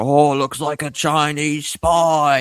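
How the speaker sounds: high, stretched-out scream, drawn out long. Recounting a man on a train screaming at a woman, imitating his screaming.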